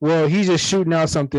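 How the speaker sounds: ordinary delivery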